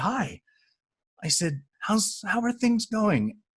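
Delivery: very high, slow, wide-open and open-hearted. Retelling blocking a woman's path to speak to her; retelling an openhearted greeting. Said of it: "I said it with the most open, open heart possible".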